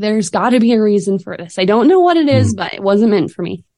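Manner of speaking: put-on sobbing, tearful, ugly crying voice. Retelling what they said after losing a business chance: retelling own crying words. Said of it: "as I'm crying".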